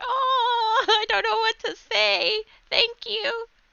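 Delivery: put-on very high, slow little-old-lady voice, drawn-out oh. Describing how they react when someone compliments them: old lady voice. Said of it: "Sounded like an old lady voice".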